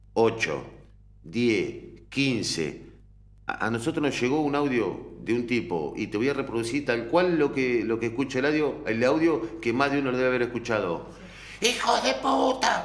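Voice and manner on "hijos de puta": put-on rough hoarse voice, much higher, slower. Replaying an audio clip that reached them, speaker imitates a hoarse-voiced guy. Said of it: "Un tipo de voz ronca".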